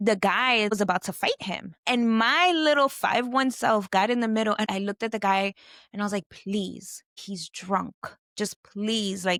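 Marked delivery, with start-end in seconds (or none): 6.3-9.2 acted-out, slow, begging and pleading voice. Retelling pleading with a huge man about to fight: retelling pleading. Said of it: "pleading with this man".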